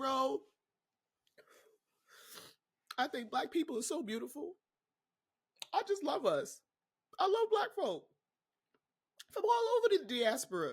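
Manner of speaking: crying through the words. Speaker talks directly to y'all, crying while speaking. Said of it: "And I'm crying because".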